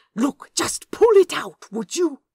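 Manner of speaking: very loud, high-pitched hiss. Reading a story, a character hisses at Crowley under his breath. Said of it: "He hissed at Crowley under his breath".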